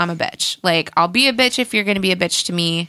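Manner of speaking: normal talking voice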